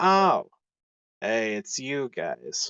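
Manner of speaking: flat, deadpan voice. Acting out a recruitment officer greeting people who walk in: deadpan. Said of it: "the one that was really like deadpan".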